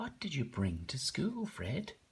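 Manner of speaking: put-on questioning tone, rising and inquiring. Reading a story aloud, voicing a question to Fred, in a question voice. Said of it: "I put on a kind of a question voice".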